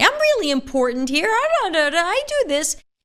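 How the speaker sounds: emotional pleading. Showing how presenting facts emotionally sounds, in an emotional tone. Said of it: "If you present them emotionally".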